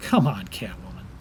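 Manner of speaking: scornful scoff. Answering a woman found on the rooftops at night, scoffing. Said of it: "(Nightwing scoffs)".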